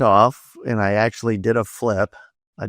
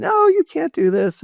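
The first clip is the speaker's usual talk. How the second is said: very high, drawn-out, stretched-out shriek. Retelling a cliff jump as his wife screams at him: imitating wife screaming. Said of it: "my wife screaming at me".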